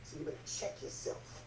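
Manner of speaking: menacing, low, quiet, hushed voice.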